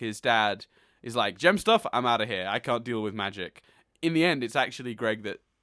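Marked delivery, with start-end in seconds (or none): none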